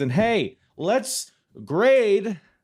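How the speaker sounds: very high, loud, drawn-out yell. A host finishes plugging his socials and turns to grading the show, yelling. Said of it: "I don't know why I'm yelling".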